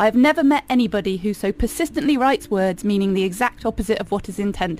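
plain

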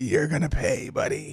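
soft, non-breathy whisper. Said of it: "I'm going to whisper in the children's ear".

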